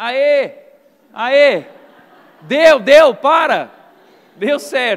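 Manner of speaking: very loud, slow, drawn-out hollering rising in pitch. Recalling calling up to someone on the roof about TV static, retelling a shout. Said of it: "você ficava gritando assim".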